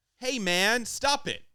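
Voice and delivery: attempted American accent, pitched very high. After admitting trouble doing accents, trying an American accent. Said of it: "I attempted this American accent".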